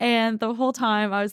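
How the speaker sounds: ordinary delivery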